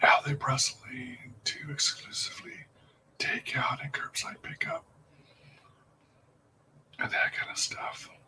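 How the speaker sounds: very quiet, hushed whisper. Speaking to stream viewers who are eating along, whispering. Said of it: "I'm now in a whispered voice".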